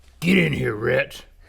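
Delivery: deep, gruff voice. Playing the dad in a sketch, calling his teenage daughter in: deep, gruff voice. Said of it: "(deep, gruff voice)".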